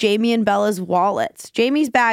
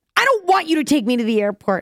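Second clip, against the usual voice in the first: mock, put-on screaming; 5 semitones higher than usual. Retelling a woman screaming back at the speaker, imitating her screaming. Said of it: "She starts screaming at me".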